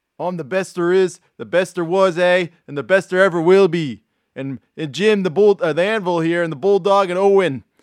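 put-on Canadian accent. Speaker attempting an impression, Bret Hart Canadian impression. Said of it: "You just have to sound Canadian".

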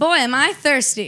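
1930s gangster-style patter voice. Describing approaching people when low on money, in a 1930s gangster voice. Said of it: "a 1930s gangster?".

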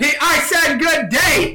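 put-on angry shout, full of rage. Quoting the line that ends the scene: angry Willy Wonka shout. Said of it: "he's so angry".

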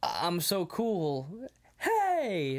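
"hey" drawn out, goofy, swooping, very slow. Retelling a movie scene, imitating a character: goofy Matt impression. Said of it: "his weird, goofy, like".

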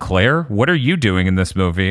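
ordinary talk, nothing marked

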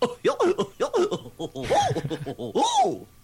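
very high-pitched, drawn-out, slow laugh. Showing a character's laugh when really tickled: Goofy laugh. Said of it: "when he just gets really tickled".

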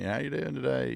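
put-on Southern US accent, pitched slightly up. Nick Saban greets the speaker over the phone: Nick Saban southern accent. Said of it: "In a southern accent".

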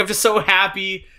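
mock teary, joyful crying through the words. Retelling a scene where she starts crying, imitating her happy crying. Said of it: "She starts crying".

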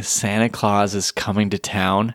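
ordinary talk, nothing marked

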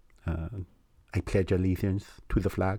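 low put-on Spanish accent. Showing how someone from Spain might sound, in a Spanish accent. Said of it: "if I did like a Spanish accent see".

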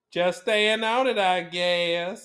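put-on American Southern belle accent. Quote your favorite movie as Elizabeth Taylor speaking to Paul Newman, in an Elizabeth Taylor accent. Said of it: "That accent was spot on".

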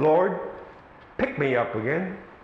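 meek, humble, yielding, submissive tone. Describing someone who went their own way and fell, mock-submissive pleading voice. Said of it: "you will say with a submissive voice".

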